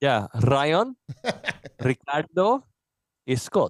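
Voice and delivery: accidental Russian accent slipping in. Asked to say the names in spanish, the speaker slips into an accidental russian accent. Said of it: "I don't know why I had a Russian accent there".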